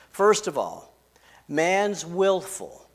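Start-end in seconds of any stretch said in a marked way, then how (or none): 1.5-2.7 slow, with willful stressed. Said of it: "I put the emphasis on willful".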